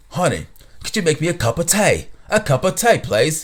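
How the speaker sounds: put-on assumed British accent. Joking about asking for tea in a put-on British accent like Harry Potter. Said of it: "Sound like you're from Harry Potter".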